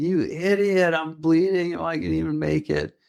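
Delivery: mock, belligerent, high, furious yelling. Speaker recounts yelling at a guy who took it calmly, retelling a yell. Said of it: "I was just yelling".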